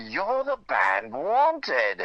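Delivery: fine put-on British accent with swooping pitch. Retelling how a man stepping out of a hotel elevator spoke to you, in a great British accent. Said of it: "with a great British accent".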